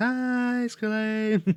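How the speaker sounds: shouted, very high voice. Retelling a phone call with an uncle, doing his shouted reply: retelling a yell. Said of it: "he yells back".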